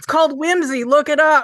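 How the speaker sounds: loud, high comeback. Retelling the reply he shot back loudly at someone: retelling a loud retort. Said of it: "And so loud back".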